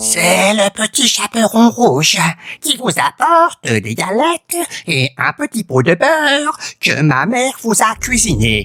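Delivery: pitch way up, swooping. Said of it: "dit le loup en contrefaisant sa voix".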